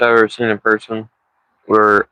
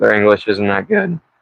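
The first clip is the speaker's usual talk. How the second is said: voice cracking and breaking. Telling a story about fishermen weighing a fish: voice cracking. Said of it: "my voice cracks".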